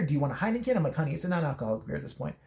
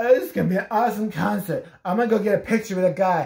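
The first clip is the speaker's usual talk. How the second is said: mock drunken girl voice, louder; 2 semitones higher, 6 dB louder than usual. Retelling what a drunk girl at a concert said: imitating a drunk girl. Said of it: "a drunk girl comes over".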